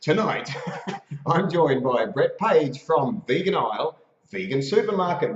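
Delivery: broadcast-style show-intro announcer delivery. Host introducing a guest on the episode, in an announcer voice. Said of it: "this is my announcer's voice".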